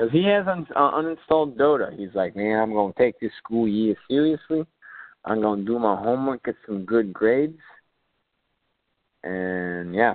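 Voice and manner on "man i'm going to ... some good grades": put-on Chicago accent. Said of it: "your little accent there".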